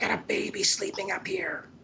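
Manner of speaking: put-on high, scolding yell. Retelling how a lady came out and started yelling, imitating a lady yelling. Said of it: "she starts yelling at us".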